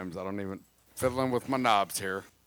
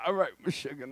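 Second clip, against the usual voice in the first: imitated put-on voice, pitched higher; 6 semitones higher than usual.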